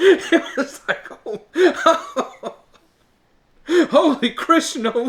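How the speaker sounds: high, helpless laughing through the words. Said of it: "I can't even say it".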